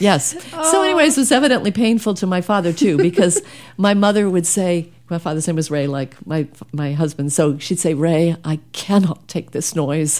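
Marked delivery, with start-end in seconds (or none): 7.9-10.2 put-on small, little British accent. Retelling what her mother would say to her father, in a little British accent. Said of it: "in her little British accent".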